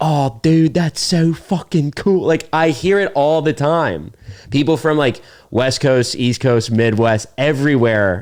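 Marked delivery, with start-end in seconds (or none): 0.0-2.3 high, put-on Baltimore, Maryland dumb-guy accent. Discussing how people pretend to be a dumb guy, doing a dumb-guy Maryland accent. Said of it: "always hear like".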